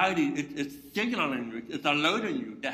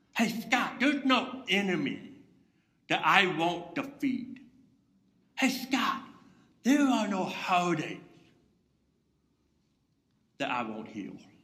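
whispering voice; 2 semitones higher than usual. Voicing god speaking softly to a listener: whispering as god. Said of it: "He's whispering".

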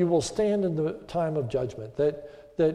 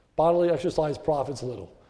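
ordinary talk, nothing marked

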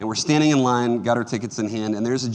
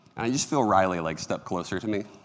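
ordinary delivery

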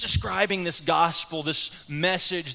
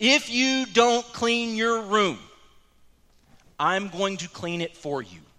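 slow, deliberate, each word spaced and measured; 3 semitones higher than usual. Retelling what was said earlier, spoken slow and deliberate. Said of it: "and I said it slowly like this".

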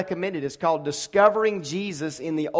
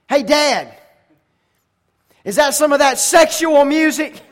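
put-on very high, very loud, booming kid voice; 9 semitones higher, 8 dB louder than usual. Father recalls his son tapping him at the Wendy's counter: loud booming voice. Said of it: "he's always had a loud, booming voice".

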